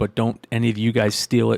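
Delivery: ordinary delivery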